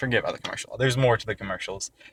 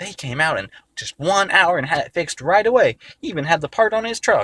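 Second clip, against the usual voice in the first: loud, high, dim-witted country-bumpkin voice; 8 semitones higher, 5 dB louder than usual. Retelling a call to an appliance store about a repair: stupid rural voice. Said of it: "that's my stupid voice".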